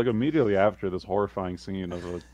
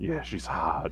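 put-on lecherous, creepy old man voice; 5 dB quieter than usual. Retelling what a creepy old man said about a model: imitating a creepy old man.

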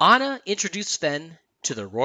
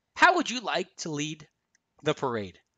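plain

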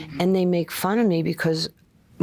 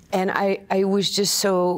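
ordinary talk, nothing marked

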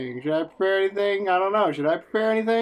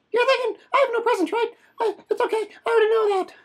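very high, tweaked-out, strung-out voice. Voicing a character in a role-play scene, in a meth addict voice. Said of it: "I'm picturing him as like a meth addict right now in my head when I'm doing that voice".

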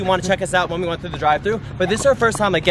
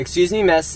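normal talking voice

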